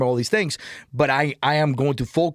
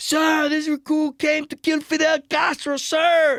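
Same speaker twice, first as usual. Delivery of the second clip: very high, loud, high-pitched shouting; 13 semitones higher than usual. A recruit answering a superior, retelling a loud yell. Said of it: "Like loud as hell".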